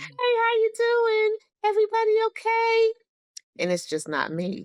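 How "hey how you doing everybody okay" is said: polite tone in a very high voice. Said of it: "your voice should have a higher pitch".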